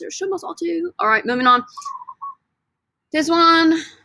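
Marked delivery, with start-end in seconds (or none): 0.1-0.9 put-on English British accent. Teaching the meanings of deber to a class: British accent. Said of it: "Say it with British accents".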